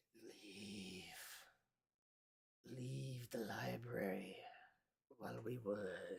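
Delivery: echoing, half-whispery voice. Narrator voicing what Crowley hears in the library, echoey half-whispery voice. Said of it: "a echoey kind of whispery voice".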